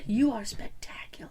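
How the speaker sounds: put-on whisper. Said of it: "clutched it and whispered".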